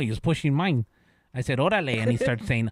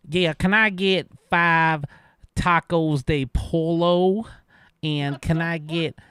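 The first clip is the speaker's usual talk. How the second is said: mock annoying, demanding tone; 2 semitones higher than usual. Retelling an annoying customer's food order, imitating the customer ordering. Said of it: "let me say it like he did".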